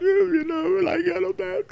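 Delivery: put-on tearful crying voice, very high and drawn-out. Retelling a clip of someone crying, imitating someone crying. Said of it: "he's just like crying".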